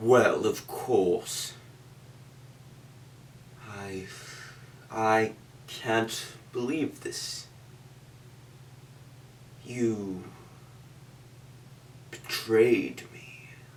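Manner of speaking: creepy voice. Showing how to make more eerie voices for characters: eerie voice. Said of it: "how to make more eerie voices".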